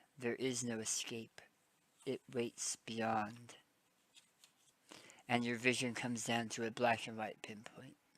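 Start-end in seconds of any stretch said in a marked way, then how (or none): 0.2-3.5 soft, close half-whisper. A strangely familiar voice leans down to your ear, half-whispering. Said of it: "you hear a strangely familiar voice whisper".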